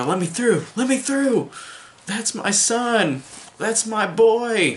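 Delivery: high, slow, anguished, grieving pleading. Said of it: "you just hear him go".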